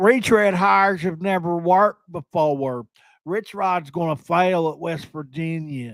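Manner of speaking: mocking, over-the-top, exaggerated put-on country accent. Quoting a Marshall fan's remark to the speaker, in a put-on country accent. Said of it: "let me do a better accent".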